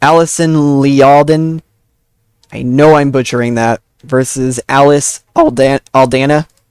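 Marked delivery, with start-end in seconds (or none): 4.0-6.4 voice cracks, a little break in the voice. Announcing the fighters of the co-main event, voice cracking. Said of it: "little voice crack there".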